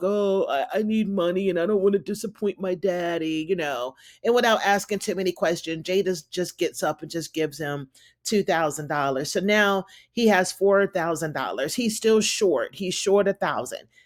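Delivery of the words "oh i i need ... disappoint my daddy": mock-sad puppy-dog pleading tone. Acting out a man asking Jada for money, imitating a sad puppy-dog plea. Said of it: "looking all sad, puppy dog".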